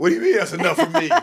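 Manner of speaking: put-on drunk, argumentative voice. Acting out arguing with a bartender who cuts them off: pretend arguing. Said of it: "I'm gonna argue with him like".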